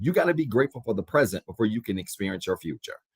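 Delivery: fast, run-together, rattled-off delivery.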